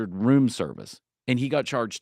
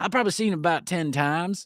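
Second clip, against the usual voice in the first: full-on put-on thick rural Southern accent, pitched up; 5 semitones higher than usual. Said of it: "It was full redneck accent".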